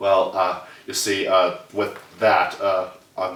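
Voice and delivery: very slow musing with stretched-out uhs and ums. Answering about a movie sequel, talking like Jeff Goldblum. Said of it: "I don't know why I'm talking like Jeff Goldblum".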